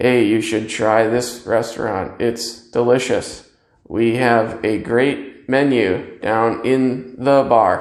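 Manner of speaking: level, unexcited, flat, low monotone. Showing how a voice sounds with no excitement in it: flat monotone. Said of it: "If all you say is in a monotone".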